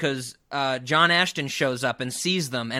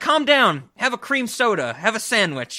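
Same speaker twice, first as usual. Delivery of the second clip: mock flippant mob boss voice, higher and slower; 8 semitones higher, 5 dB louder than usual. Retelling a film mob boss talking to another character, mimicking a flippant mob boss. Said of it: "he's like very flippant about some of this stuff".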